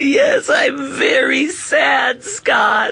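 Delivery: tearful, sorrowful, crying voice. Introduced as a guest on an informational segment, Doctor Trago crying. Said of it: "Are you crying?".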